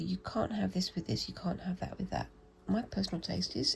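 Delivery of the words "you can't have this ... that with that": ordinary delivery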